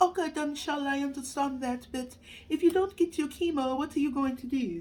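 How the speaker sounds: bad fake British accent. Quoting her reply to the news of stopping chemo, in a bad british accent. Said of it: "my British accent sounds more African".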